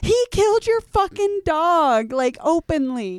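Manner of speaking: shrill, very high, loud, drawn-out screaming. Recalling watching Dio's misdeeds on screen, retelling screaming at the screen. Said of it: "I'm like screaming at my screen like".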